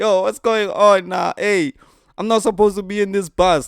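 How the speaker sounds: mock alarmed, panicked, high and loud. Telling a bus story, speaker acts out a passenger as the bus leaves, imitating a panicking man. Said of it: "my guy starts panicking".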